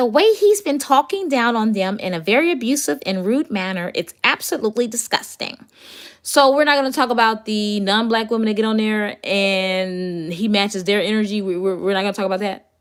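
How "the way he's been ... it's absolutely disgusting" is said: put-on girl voice.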